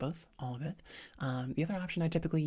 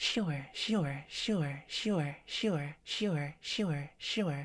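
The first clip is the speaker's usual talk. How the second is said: slow, bright, pleasant voice. Demonstrating a repetition exercise with filler words, nice bright voice. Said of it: "in that nice bright voice".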